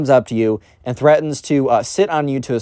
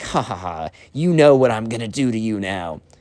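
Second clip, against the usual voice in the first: awkward, fake, forced anime-style villain cackle; 3 semitones lower than usual. Retelling how someone laughed before a threat: imitating a fake anime villain laugh. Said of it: "one of those anime villain laughs".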